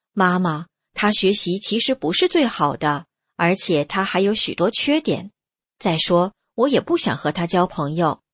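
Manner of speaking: ordinary delivery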